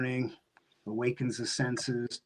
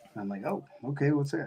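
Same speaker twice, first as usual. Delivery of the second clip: ordinary talk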